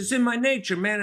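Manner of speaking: bad fake Italian accent, pitched very high. Counselor quoting a man from a couple who loves being Italian, terrible Italian accent. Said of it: "I do a terrible Italian accent".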